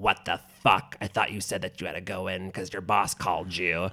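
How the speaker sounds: put-on scary old woman voice. Retelling a phone call from a stranger, in a scary old woman voice. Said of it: "like an old woman being like".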